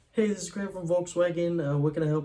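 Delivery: very high customer-service voice. Demonstrating his sales phone greeting in a much higher customer-service voice. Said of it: "it gets a lot higher".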